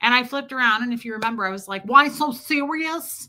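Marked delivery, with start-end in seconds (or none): 1.8-3.3 put-on Brooklyn accent, pitched up. Retelling turning around and echoing a man's words back: brooklyn accent. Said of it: "I did the Brooklyn accent".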